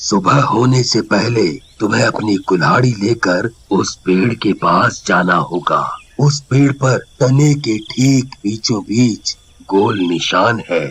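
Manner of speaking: deep, low-pitched voice. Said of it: "आगे मंदिर के पास एक ओम बाबा रहते हैं। वो कई वर्षों से तंत्र मंत्र करते हैं। / आगे मंदिर के पास एक ओम बाबा रहते हैं।".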